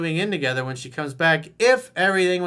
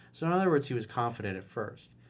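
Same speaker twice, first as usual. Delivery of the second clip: normal talking voice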